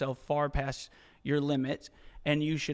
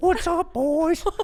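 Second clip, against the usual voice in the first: put-on trailer park voice, higher and louder; 10 dB louder than usual. Leaning into the voice after being told it sounds like Bubbles. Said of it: "You sound like Bubbles from Trailer Park Boys".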